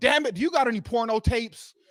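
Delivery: play-acted angry, fed-up outburst, loud and high. Telling a story about a man who got pissed off one day, retelling an angry outburst. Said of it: "The one day he just got pissed off".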